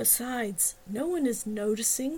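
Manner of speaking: ordinary delivery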